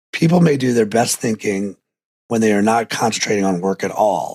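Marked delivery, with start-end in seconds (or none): none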